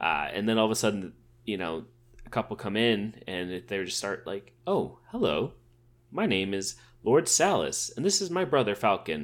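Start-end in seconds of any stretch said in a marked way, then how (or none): 4.7-9.2 refined, courteous, polite, well-spoken troll voice. Retelling how the troll prisoners suddenly speak: imitating a polite, well-spoken troll. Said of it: "they're really well-spoken. Oh, really polite".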